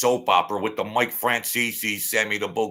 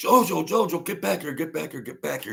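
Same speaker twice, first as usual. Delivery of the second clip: put-on scream, higher; 7 semitones higher than usual. Retelling how a companion called him back from the court: imitating someone screaming. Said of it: "He's screaming".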